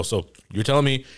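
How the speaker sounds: ordinary talk, nothing marked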